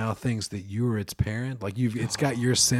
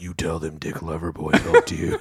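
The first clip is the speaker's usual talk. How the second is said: coaxing, swooping, sing-song stage whisper, close up; 6 semitones lower, 4 dB louder than usual. Imagining someone whispering in a baby deer's ear: imitating someone whispering. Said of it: "he's just whispering in the baby deer's ear".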